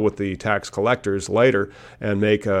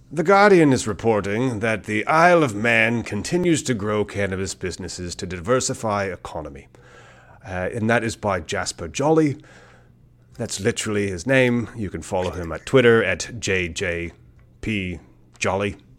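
fake put-on British accent. Reading a news item aloud: put-on British accent. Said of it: "You do a very good British voice".

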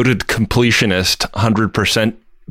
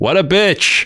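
mock yell, raised and pitched-up; 8 semitones higher than usual. Retelling how a woman yelled back from the other room, yelling back. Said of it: "And she yells back".

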